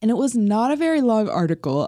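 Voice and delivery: talking through a yawn. Speaker remarks on an article they found, yawning. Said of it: "I'm sorry, I'm yawning again".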